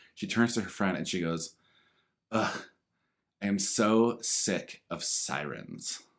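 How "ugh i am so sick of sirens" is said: acted-out, very slow, weary, exasperated fed-up drawl. Retelling what a woman said to her friend, imitating her exasperated tone. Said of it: "this was the tone and the vibe".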